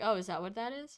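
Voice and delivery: quiet mumbling under the breath. Voicing a character squinting at a pin: mumbling under his breath. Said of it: "he mumbles under his breath".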